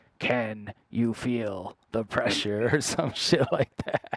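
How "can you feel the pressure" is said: very creepy eerie voice, much slower. Speaker recalling how a record had them going, in a really creepy voice. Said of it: "going in a really creepy voice like".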